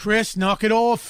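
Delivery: put-on loud, high Australian accent. Retelling a scolding a drummer heard growing up: Australian accent. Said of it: "in his Australian accent".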